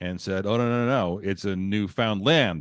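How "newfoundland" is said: Newfoundland said with stress on the final syllable -land. Retelling a man's objection in a heated exchange: stress on land in Newfoundland. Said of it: "with emphasis on the last syllable".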